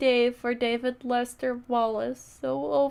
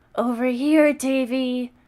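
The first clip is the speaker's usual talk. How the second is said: loud gruff calling voice, Davy drawn out; 6 dB louder than usual. Reading a story aloud, a voice calls out to David, gruff voice. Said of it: "called a gruff voice".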